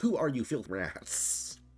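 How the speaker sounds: mock, a bit irritated, mildly annoyed tone. Reacting to a game, the speaker repeats a character's line, mock-annoyed. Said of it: "He did sound kind of annoyed".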